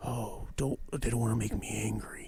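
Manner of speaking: hushed half-whispered aside under the breath. Acting out how he half-whispers to her while people yell, retelling a half-whisper. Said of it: "he like whispers to her".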